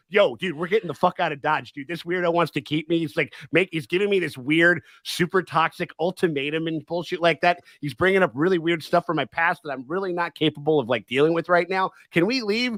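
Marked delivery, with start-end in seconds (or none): none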